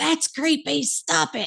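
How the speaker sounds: very high put-on holler. Retelling how Michael hollered from outside with the dog, imitating Michael hollering. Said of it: "I heard him holler".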